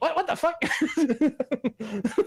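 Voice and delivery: very high, very slow, stunned disbelieving voice. Retelling a meme of a worker seeing a logo: imitating a shocked reaction. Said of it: "has this reaction of".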